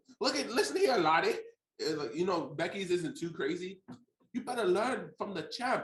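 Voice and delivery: heavy, laid-on, put-on Irish brogue. Recapping a promo with friends, quoting it in an Irish accent. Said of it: "I could not deal with all that Irish accent".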